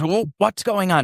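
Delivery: rough, irritated tone. Telling a story about an encounter where a man came over and asked what was going on. Imitating a gruff, angry voice. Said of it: "in a very gruff voice".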